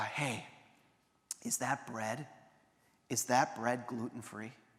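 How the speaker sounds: hushed stage whisper, dropped into. Retelling what a son said during communion: imitating a stage whisper. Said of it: "in a kinda stage whisper".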